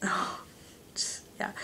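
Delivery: soft, unvoiced whisper.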